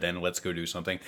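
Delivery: ordinary delivery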